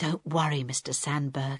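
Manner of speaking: whispering. Reading Harold's line to handcuffed Mr. Sandberg, whispered. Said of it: "Harold whispered".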